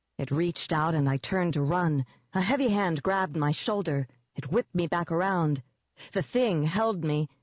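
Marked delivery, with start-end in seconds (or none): none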